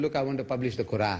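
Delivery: plain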